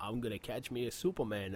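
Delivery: soft, hushed cartoon hunter voice. Joking about Batman setting traps, imagining him talking in an Elmer Fudd voice. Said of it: "Minus the FUD voice".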